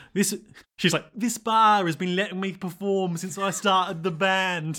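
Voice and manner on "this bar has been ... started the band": slow, fake British accent, rock star style. Imitating a character's interview answer in a british rock star voice. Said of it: "that's just my rock star voice".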